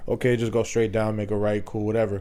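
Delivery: ordinary delivery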